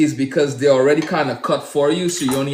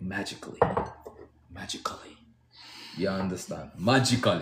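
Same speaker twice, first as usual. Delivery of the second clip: breathy voice in a Caribbean accent; 7 semitones lower, 11 dB quieter than usual. Joking while adding tomatoes to the watermelon: caribbean accent. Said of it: "My Caribbean accent".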